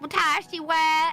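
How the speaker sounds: Japanese spoken in a thick put-on Southern accent. Imitate a TikToker you saw who makes you laugh, Japanese in really thick Southern accent. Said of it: "speaks Japanese with a really thick Southern accent".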